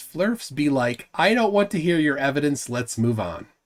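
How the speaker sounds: ordinary delivery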